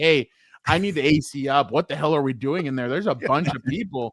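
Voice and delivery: demanding, entitled, griping complaining voice. Retelling asking theater staff for more AC: imitating a Karen complaint. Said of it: "the only Karen thing I'll do".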